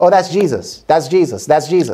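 ordinary talk

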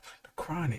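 breathy, reverent whisper. Showing how you must say the album name: whispering the album name. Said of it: "That's how you gotta say it".

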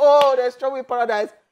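mock scream, high and loud.

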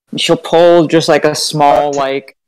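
ordinary talk

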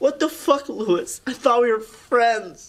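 crying, tearful. In an acted scene, a character confronts Lewis after being wronged, crying. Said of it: "are you crying right now?".

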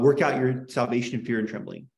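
ordinary delivery

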